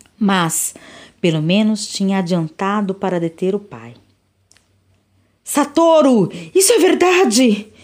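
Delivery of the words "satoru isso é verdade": shouted, high pitch. The friend's mother shouts a question at her son's friend: shouting. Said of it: "gritou a mãe do amigo".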